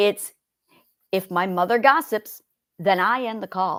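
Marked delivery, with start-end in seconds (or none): 2.8-3.8 leaning hard on the word "I". Example sentence read aloud to demonstrate word emphasis: stress on I. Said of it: "I'm going to really emphasize the word I in this sentence".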